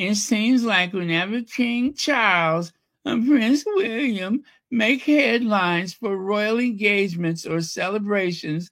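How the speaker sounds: high, whiny, complaining voice. Rereading a passage, this time more in a whining, complaining voice. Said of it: "let me do it more in a whining voice".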